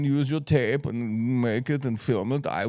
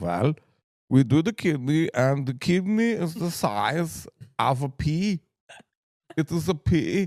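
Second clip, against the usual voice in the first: put-on German accent; 3 semitones higher than usual. Retelling what his UCLA doctor said about his kidney, in a German accent. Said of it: "I'll try to do his accent. He was German".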